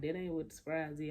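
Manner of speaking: usual speaking voice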